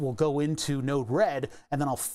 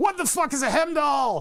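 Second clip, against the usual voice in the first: high, exasperated, frustrated screaming outburst; 12 semitones higher, 4 dB louder than usual. Retelling getting frustrated at Linux: imitating own frustrated screaming. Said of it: "when I was screaming at Linux".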